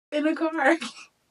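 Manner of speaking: high, loud, mock sobbing lament.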